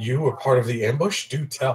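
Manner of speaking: hushed, confiding, conspiratorial stage whisper. Narrating a character who lowers his voice to a companion, conspiratorial stage whisper. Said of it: "He lowers his voice and speaks in a, you know, stage, you know, conspiratorial type uh, whisper".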